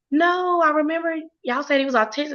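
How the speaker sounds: high, crying, tearful and insistent voice. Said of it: "remember her coming out just crying and screaming".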